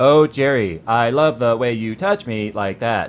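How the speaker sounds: sexy, robotic lover voice. Joking about a Microsoft sex bot, voicing it: sex bot voice. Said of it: "could you imagine the sex bot?".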